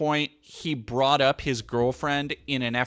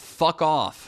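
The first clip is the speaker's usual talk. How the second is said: usual speaking voice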